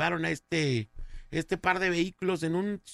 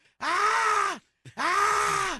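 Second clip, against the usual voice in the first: put-on female scream, higher pitched; 3 dB louder than usual. Retelling news of a woman on her balcony: imitating a woman screaming. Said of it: "empezó a gritar la doña".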